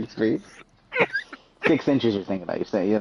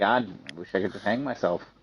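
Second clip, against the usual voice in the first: usual speaking voice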